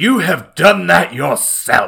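loud, slow, grand, declaiming line reading. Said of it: "and he goes".

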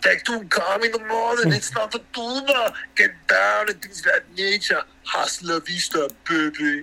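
put-on Austrian-accented voice. Closing a talk by quoting his movie lines: Arnold Schwarzenegger impression. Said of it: "I would also like to leave you with some Arnold Schwarzenegger and say".

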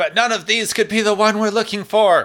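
acted, very high, yelled outburst, captain-style. Retelling an episode scene where the captain yells at a crewman: imitating Kirk yelling. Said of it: "And Kirk yells at him, going".

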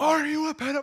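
mock very high, shrill scream. Showing how someone would yell the question at the guy, mock screaming the question. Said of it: "just screaming that word".

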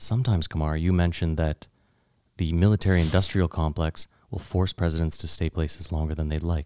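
voice brought down. Host puts a question to guest Kumar, in a lowered voice. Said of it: "Let me lower my voice here".

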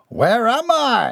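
dubious, doubtful, very high-pitched insistent tone. Finding himself not in his bedroom, a man questions those around him, demanding dubiously. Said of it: "he demanded dubiously".

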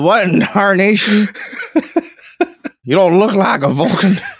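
high-pitched hollered outburst. Retelling a made-up scene of Bones on a motorcycle: imitating Bones yelling. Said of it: "And he yelled".

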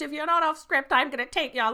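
put-on yelling. Retelling how a pageant host yells at the children: imitating someone yelling. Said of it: "Literally yelling at them".

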